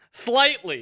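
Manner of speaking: the word slightly said with stress.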